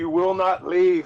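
shouting. Speaking as their character in a story game, yelling at a departing boat. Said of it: "I yell at the boat".

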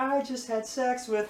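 very high, slow put-on voice. Retelling a performer's prerecorded backing track, in a high-pitched voice. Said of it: "him in a high pitched voice being like".

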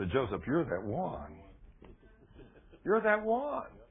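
low, devilish half-whisper, close in the ear. In a sermon, acting out the devil tempting a listener: devil half-whispering. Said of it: "the devil whispers in your ear".

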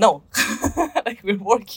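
said while laughing. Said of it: "We're like".

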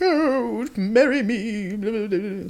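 put-on old-timey voice, "me" drawn out. Telling a hunting story, the speaker shows an 1800s people voice. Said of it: "The people from the 1800s voice".

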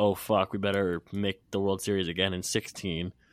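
usual speaking voice

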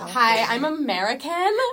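loud, high, put-on valley girl American accent. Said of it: "You sound like a valley girl".

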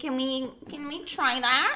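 slow, patronizing, talking-down condescending tone. Retelling the mother's request at the pool: imitating a condescending tone. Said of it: "so condescending".

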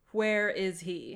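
loud, small, automated, machine-like computer voice. Game narrator voicing a voice Martha hears in her head, slightly automated computer-like voice. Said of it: "it sounds like a little automated, almost like a computer".

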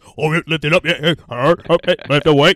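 very loud, very slow, booming, drawn-out hype voice. Demonstrating the voice used to motivate someone working out: deep [name] voice. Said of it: "And then I turn on my deep voice".

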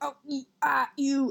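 very slow, drawn-out, angry dad voice. Retelling how an angry dad reacted: imitating an angry dad like Homer Simpson. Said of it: "he sounded like Homer Simpson".

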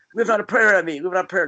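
high-pitched, yelled-out delivery. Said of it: "he was yelling".

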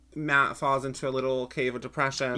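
ordinary talk

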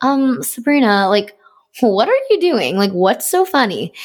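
slow, worried, concerned voice. Retelling a mom walking by and asking questions: imitating a concerned mom. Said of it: "she would be so concerned".

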